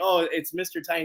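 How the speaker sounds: normal talking voice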